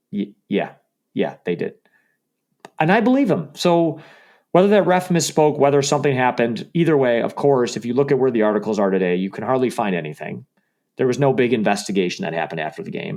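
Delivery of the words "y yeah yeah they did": reluctant, grudging, low voice. Retelling a radio answer about a call from New York: imitating a reluctant Dan Campbell. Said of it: "he reluctantly said it on an interview".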